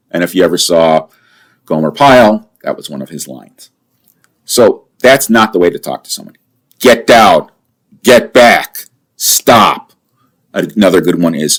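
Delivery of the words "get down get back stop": forceful, barked, loud, slow commanding voice. Showing how to order someone holding a firearm to back off, in a loud, commanding voice. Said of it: "loud, commanding voice".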